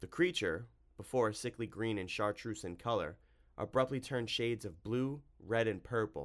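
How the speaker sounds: ordinary delivery, nothing marked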